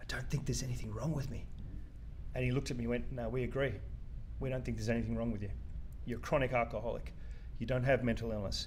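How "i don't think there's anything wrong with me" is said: secretive, hushed, leaning-in whisper. Retelling leaning across to him during a diagnosis talk, whispering. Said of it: "I leaned across to him and I whispered".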